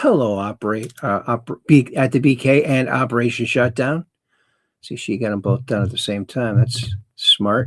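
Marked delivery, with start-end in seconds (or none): none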